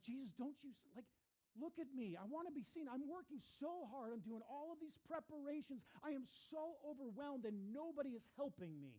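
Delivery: mock anguished, high, overwhelmed pleading cry. Retelling Martha's complaint to Jesus: imitating Martha's overwhelmed cry. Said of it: "It's this cry".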